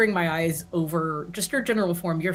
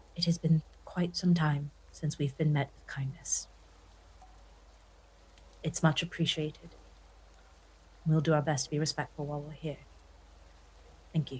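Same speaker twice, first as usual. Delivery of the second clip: very quiet, soft murmur under the breath; 2 semitones lower, 7 dB quieter than usual. Voicing a character thanking a host for kindness: very quietly, under her breath. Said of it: "very quietly, under her breath, say".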